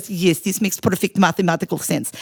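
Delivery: put-on thick Russian accent. Retelling a student's answer about his dissertation, imitating Piotr's thick Russian accent. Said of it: "he had this thick Russian accent".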